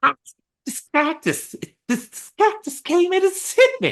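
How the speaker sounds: very high-pitched voice with a lisp. Imagining a boxer punching a cactus: Mike Tyson impression. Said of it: "I can't do a very good Mike Tyson".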